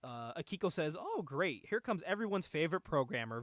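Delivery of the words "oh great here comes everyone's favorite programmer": play-acted, thick, heavily laid-on sarcasm. Recapping a scene, retell Akiko's line mock-sarcastically. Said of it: "very sarcastically".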